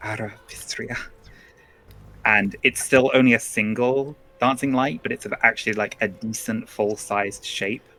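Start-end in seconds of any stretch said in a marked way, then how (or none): 0.0-1.0 muttered under breath, much quieter. Player voicing a character flicking his wand to cast a spell, muttered under breath. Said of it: "just mutter under his breath".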